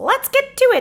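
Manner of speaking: bad, squeaky, sing-song cartoon mouse voice, high, swooping. Video creator kicking off the story, in a terrible Mickey voice. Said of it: "That's a terrible Mickey voice".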